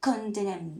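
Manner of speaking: ordinary delivery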